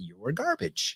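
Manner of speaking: mock hushed, pleasant, very quiet, calm tone. Describing how he replies to trash talk in a match, very calm and nice voice. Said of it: "in a very calm and nice voice".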